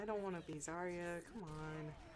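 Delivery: normal talking voice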